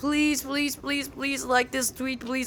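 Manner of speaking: repeated, desperate, high pleading beg. Asking viewers to like a tweet: begging. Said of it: "I actually beg".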